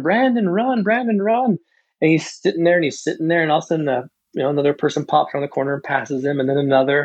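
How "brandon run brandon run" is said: put-on very high, drawn-out, stretched scream. Retelling a race, cheering an athlete on: imitating own screaming. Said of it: "and I'm screaming".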